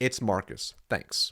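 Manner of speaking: brief, direct, soft, breathy, near whisper. Demonstrating a reply to a gatekeeper asking who is calling: short and direct. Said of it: "You give it short and direct".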